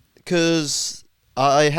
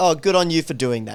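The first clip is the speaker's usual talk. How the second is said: ordinary talk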